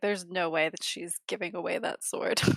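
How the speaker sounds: mumbled, half-swallowed, muttered under the breath. Player voicing a character's reaction as the party sets off: muttering under his breath. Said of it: "mutters under his breath".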